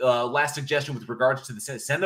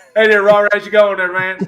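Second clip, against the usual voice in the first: put-on Southern country accent, higher, louder; 7 semitones higher, 12 dB louder than usual. Acting out a man in the woods greeting a neighbor, country dude accent. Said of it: "this like you know country dude".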